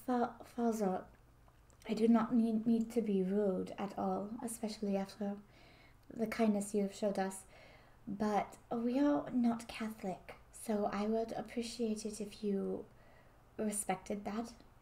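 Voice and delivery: low voice. Voicing a character in a game scene who speaks to the father, low voice. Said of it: "kind of like in a low voice".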